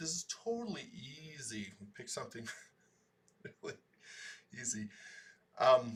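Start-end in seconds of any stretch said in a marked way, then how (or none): 0.0-4.9 openly sarcastic, swooping sing-song. Calling the model chosen for today easy: sarcastic. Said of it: "saying that sarcastically".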